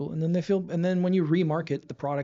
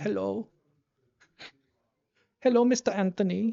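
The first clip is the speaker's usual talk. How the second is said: high-pitched fake Swedish accent; 5 semitones higher than usual. Imagining a caller from Sweden phoning in to the podcast, high-pitched fake Swedish accent. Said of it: "I'm just making it high pitched".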